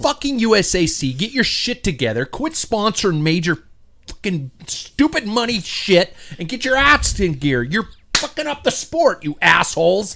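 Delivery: furious, high-pitched, angry swearing rant. Complaining to friends about a race upgrade rule: angry rant. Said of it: "I'm pissed off right now".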